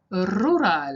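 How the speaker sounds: Spanish accent, rural and drawn out. Teaching pronunciation, trying one word in different accents: spanish accent. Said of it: "maybe a Spanish accent".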